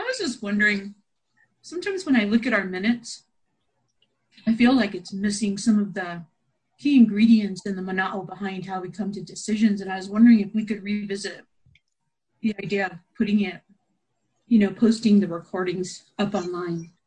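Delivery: speaking while chewing, mouth full of food. A member speaks up during a meeting, talking with mouth full. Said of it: "In between my mouthful".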